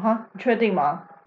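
put-on smug, arrogant tone. Retelling a clinic visit, imitating the doctor's smug, arrogant tone. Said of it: "他还就是很拽，就是用一种：".

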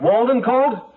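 loud shouting. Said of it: "You don't have to yell".

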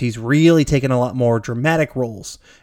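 ordinary talk, nothing marked

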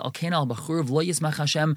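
ordinary talk

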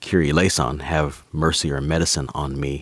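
ordinary talk

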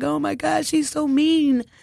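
tearful, whimpering, high, drawn-out crying whine. Recalling running to the corner to call your mom, retelling crying. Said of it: "crying like".

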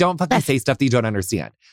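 plain

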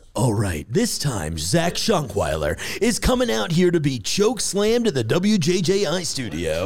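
slow, swooping big-screen trailer narrator voice. Asked by a co-host to announce Zach's appearance, in a movie announcer voice. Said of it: "I think you should do it in announcer voice".

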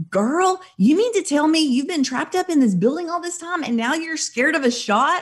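mock stunned, high-pitched, amazed disbelief. Speaker retells a man's reply to her panic; retelling amazed disbelief. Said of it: "his eyes got really big and he goes".

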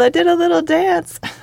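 mock very high holler, words stretched out. Retelling checking off a task on a work list: imitating own yell. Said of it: "I yelled".

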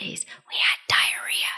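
barely voiced, soft, hushed whisper. Retelling how a neighborhood kid said an embarrassing word: imitating a whisper. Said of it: "he whispered it".

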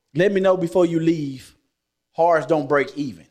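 ordinary talk

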